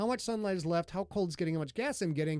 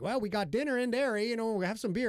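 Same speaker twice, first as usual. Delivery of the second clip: put-on Yooper accent from Upper Michigan; 4 semitones higher than usual. Retelling what the staff said after check-in, in a thick Yooper accent. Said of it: "the big thick Uper accent".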